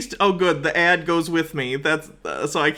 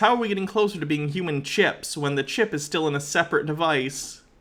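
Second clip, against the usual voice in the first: plain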